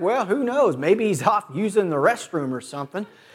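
put-on sarcastic, offhand, mocking, jeering tone. Retelling how a man taunted a loud crowd calling on their god, retelling a mocking taunt. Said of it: "he's literally mocking them".

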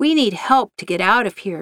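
ordinary delivery

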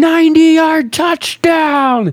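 mock shrill, very high, loud celebratory scream. Retelling a quarterback screaming from his back after a long touchdown: imitating Philip Rivers screaming. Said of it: "laying on his back screaming".

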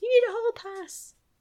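mock very high-pitched, shrill yell. Retelling how the teacher yelled as a student ran out, retelling a teacher's yell. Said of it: "the teacher yells".

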